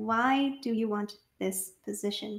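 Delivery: soft, mechanical, machine-like robotic monotone. Narrating Ami asking a question from a list in her hands, somewhat robotic. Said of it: "And she asks somewhat robotically".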